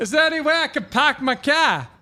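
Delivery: poorly put-on Boston accent. Admitting he can't do it, the speaker attempts a bad boston accent. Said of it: "I can't do the Boston accent".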